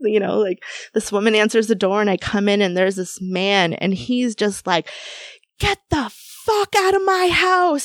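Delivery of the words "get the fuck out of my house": put-on very high, shrieking man's scream. Retelling a client's reaction at the door: imitating a man screaming. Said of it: "he's screaming at me and charging".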